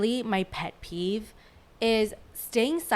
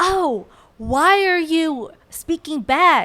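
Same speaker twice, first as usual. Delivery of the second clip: mock very loud, outraged, drawn-out scolding; 7 semitones higher, 9 dB louder than usual. Retelling how parents react when answered back: imitating a scolding parent. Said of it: "And then they're like".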